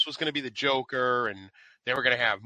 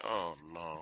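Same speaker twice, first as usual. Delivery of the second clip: acted, barely audible, sad, downcast tone; 7 semitones lower, 13 dB quieter than usual. Retelling how someone first reacted in a scene: imitating a sad reaction. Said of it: "at first he's all sad. He's like".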